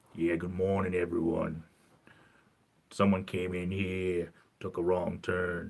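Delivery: clumsy, bad put-on Australian accent. Waiting for viewers to join the stream: Billy Down Under voice. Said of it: "I sound like Billy Down Under now".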